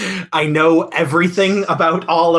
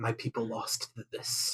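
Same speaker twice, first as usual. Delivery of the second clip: whispered under breath, lower and quieter; 5 semitones lower, 17 dB quieter than usual. Shaking head at a bar fight, in character: whispering under breath. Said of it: "whisper under my breath".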